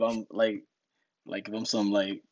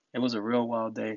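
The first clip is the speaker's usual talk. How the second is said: usual speaking voice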